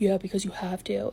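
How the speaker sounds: low grumbling mutter under the breath. Retelling how a man answered a woman, retelling a mutter under breath. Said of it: "mutters under his breath".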